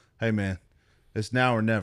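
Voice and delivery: ordinary delivery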